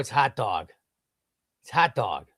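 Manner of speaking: "hot dog" in a strong Chicago accent. Showing how the speaker sounds most Chicago, saying 'hot dog' in a Chicago accent. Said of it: "that's when I sound most Chicago when I say hot dog".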